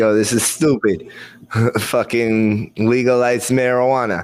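slow, drawling gangster voice. Doing how DeSantis sounds in the speaker's head: DeSantis impression, like a Soprano. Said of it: "sounds like a soprano".

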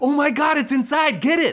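put-on very high, panicky, alarmed shout. Retelling the first night at his house, seeing the tiny dog inside: retelling a shout. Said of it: "and I shouted".

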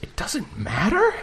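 quiet muttering under the breath. Retelling a movie scene where a patient answers back, muttered under the breath. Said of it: "just under his breath".

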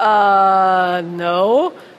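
dismissive, loud voice.

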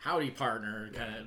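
put-on full old west cowboy accent. Describing how he went full old west, old west cowboy accent. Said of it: "go full like old west like".

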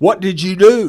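acted, high-pitched, drawn-out screaming yell. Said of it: "yelling at me".

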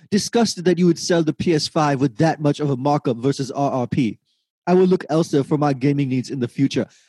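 ordinary delivery

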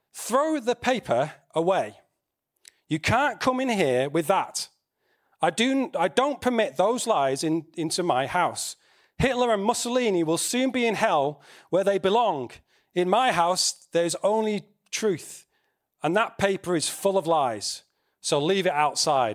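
normal talking voice

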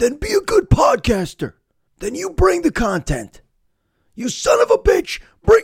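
mock worked-up, high, swooping, angry ranting yell. Voicing an imagined listener shouting back at the podcaster: imitating a listener shouting. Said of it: "this is the part where you shout".

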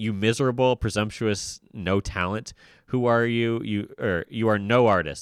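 plain

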